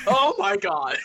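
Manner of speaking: high, loud, panicked startled scream. Voicing a character who wakes up and sees someone above him: screaming in fright. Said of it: "starts screaming".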